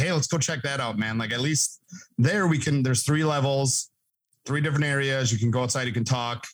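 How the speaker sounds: ordinary delivery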